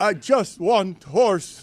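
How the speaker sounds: very slow, drawn-out, near-sobbing voice. Repeating a quote in a limited fake voice: limited fake Jokic voice. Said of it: "My limited fake Jokic".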